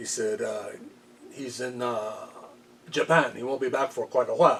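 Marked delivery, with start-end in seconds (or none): 1.3-4.6 put-on French Canadian accent. Retelling a phone call with Andre's friend in a put-on French Canadian accent. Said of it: "So with his French accent, French Canadian accent".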